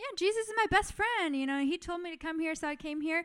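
high, fast, offhand, nonchalant casual tone.

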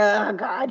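utterly unbothered, bored, fed-up exclamation. Imitating the friend Annie in a movie: imitating Annie sounding bored. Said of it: "she just sounds so bored with life".

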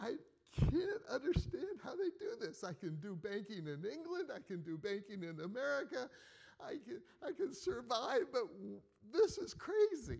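on the verge of tears. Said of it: "trying hard not to cry".

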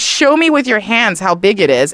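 ordinary delivery

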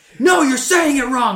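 put-on very high, shrill, very loud, angry. Imitating commenters upset about a mispronounced word: imitating upset commenters. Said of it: "I can just hear the comments now".

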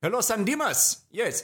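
put-on Nigerian accent, very high pitched, slow. Acting out a Nigerian guy in a joke: put-on Nigerian accent. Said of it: "Is this a super racist accent?".

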